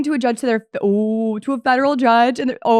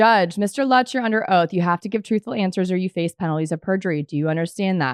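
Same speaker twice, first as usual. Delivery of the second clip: ordinary talk, nothing marked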